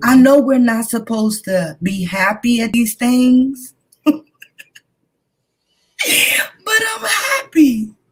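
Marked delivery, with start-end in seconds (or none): 6.0-7.9 high, slow, joyful excited cry. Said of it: "I sound a little excited because I am".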